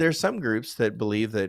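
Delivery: ordinary talk, nothing marked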